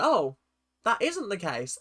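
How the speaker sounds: ordinary talk, nothing marked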